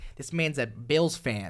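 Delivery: put-on New York accent laid on heavy. Retelling what a guy said about the snowball fight, in a thick new york accent. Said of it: "in the most New York accent of all time".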